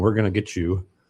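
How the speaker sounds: ordinary talk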